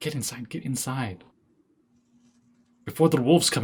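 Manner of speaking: scared, frightened voice. Voicing frightened guards hurrying travelers through a gate: scared. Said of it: "they look pretty scared".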